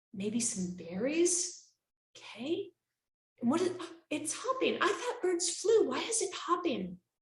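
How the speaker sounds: soft teacher voice. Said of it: "on the ground really quietly".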